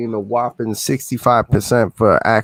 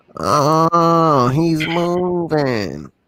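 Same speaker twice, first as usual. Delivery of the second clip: teasing, pitched-up put-on voice; 6 semitones higher than usual. Teasing a friend about moving, in a John impersonation. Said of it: "Was that a John impersonation?".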